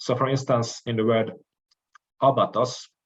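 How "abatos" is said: abatos with stress on the opening a. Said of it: "it is this vowel that should be stressed".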